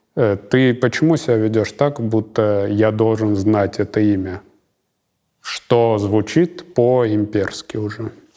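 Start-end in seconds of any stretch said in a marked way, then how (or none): none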